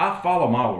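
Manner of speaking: snooty, stuck-up, scornful sarcastic tone. Retelling how she answered in the jury box: mocking her sarcastic, snooty tone. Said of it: "in such a sarcastic, snooty way, like".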